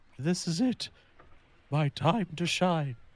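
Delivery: muttering under breath. Voicing a character casting a spell: muttering under breath. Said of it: "Zeke will mutter under his breath".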